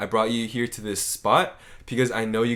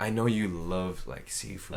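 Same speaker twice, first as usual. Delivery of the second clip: put-on creepy voice, lower and quieter; 4 semitones lower, 8 dB quieter than usual. Retelling how a date's line was said: imitating a creepy tone. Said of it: "he was saying it in that tone".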